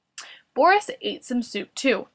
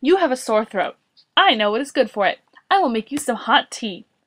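ordinary delivery, nothing marked

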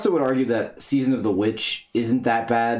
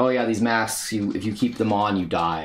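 normal talking voice

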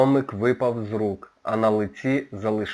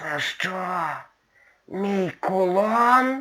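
very high otherworldly voice, "кулон" drawn out; 9 semitones higher than usual. Narrator voicing the dead duchess as she speaks to her kidnapper, in an otherworldly voice. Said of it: "потойбічним голосом промовила вона".

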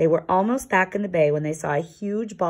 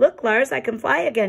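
glad, happy, high shout of delight; 7 semitones higher than usual. Yuri calls out to lars, cried happily. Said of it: "he cried happily".

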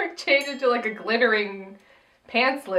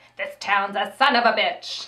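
jaded, seasoned showbiz veteran character voice. Imagining him advising a young Broadway newcomer: Paul Lynde voice. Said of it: "imagine him talking to a young Broadway ingenue".

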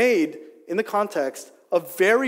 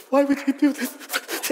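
put-on old woman crying, much higher pitch; 2 semitones higher than usual. Retelling the head-shaving fallout, the speaker imitates their grandma crying as she asks. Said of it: "she begins to cry".

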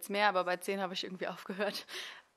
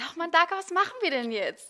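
high, raised, girlish put-on voice; 10 semitones higher, 7 dB louder than usual. Showing how she always talks in the film, higher-pitched voice. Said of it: "Und ich rede im Film immer höher. ... So rede ich da immer".

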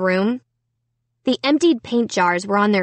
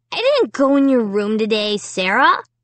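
plain

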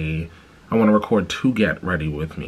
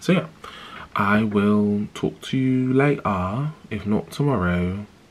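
fake, put-on British accent; 3 semitones higher than usual. Saying goodbye for now to the listener, in a put-on british accent. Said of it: "Do you like my British accent?".

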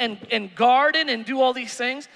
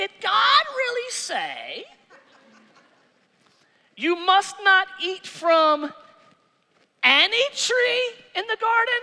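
very slow, high, put-on serpent voice; 8 semitones higher than usual. Reading the story aloud, the serpent speaks to the woman: put-on serpent voice. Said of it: "I gotta do the voice".

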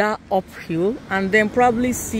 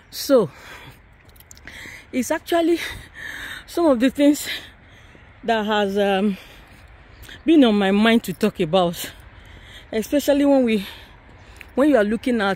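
panting, winded, out of breath, breathing hard. Talking while going up a hilly stretch: panting, out of breath. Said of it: "sorry, I'm panting".

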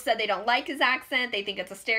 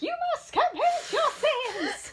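very high, robotic cult-leader preacher voice. Describing the voice he had in mind, the speaker does a Futurama robot preacher voice. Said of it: "the voice that I was thinking most of was the robot".

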